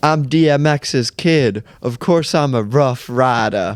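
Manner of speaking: slow, put-on tough-kid voice with swagger. Retelling a kid's video line: imitating a kid trying to sound thuggy. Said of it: "this six-year-old kid trying to sound so thuggy".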